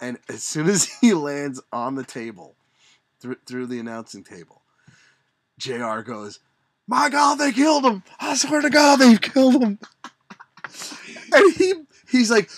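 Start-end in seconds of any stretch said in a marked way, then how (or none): 6.9-9.8 very high, loud, dramatic ringside announcer cry. Retelling a match moment to listeners, imitating JR's dramatic call. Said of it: "he's building the drama".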